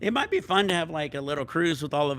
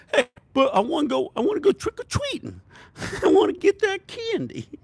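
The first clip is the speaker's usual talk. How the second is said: high comedian voice, pitch swinging wildly; 14 semitones higher, 4 dB louder than usual. Retelling what a child said about trick-or-treating: Andrew Dice Clay voice. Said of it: "My kid became Andrew Dice Clay".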